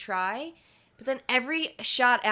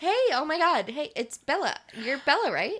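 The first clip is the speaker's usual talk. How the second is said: really peppy, pitched-up, high voice; 5 semitones higher than usual. After praising a friend's impression, the speaker tries a peppy Anna Kendrick impression. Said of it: "you just have to be like really peppy".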